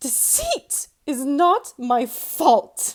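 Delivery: savage, fierce, very loud, high-pitched cry. A child crying out to the adult correcting her, in a savage, high voice. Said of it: "I cried out in a savage, high voice".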